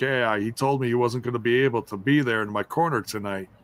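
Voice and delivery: ordinary talk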